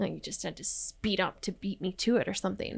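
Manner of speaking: very quiet, barely audible under-the-breath mutter. Retelling what an older woman said at the door: imitating someone muttering under breath. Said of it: "under her breath".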